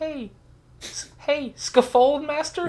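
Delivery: put-on very high, very slow tiny child voice. Retelling a game lobby where a little kid calls out: imitating a little kid's voice. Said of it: "You just hear this little ki-".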